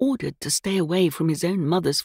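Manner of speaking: ordinary delivery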